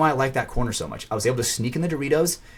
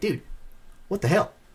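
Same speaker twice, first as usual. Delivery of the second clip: put-on pitched-up Midwestern American accent; 7 semitones higher, 3 dB quieter than usual. Retelling what another man said to him, in a midwest accent. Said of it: "he had like a Midwest accent".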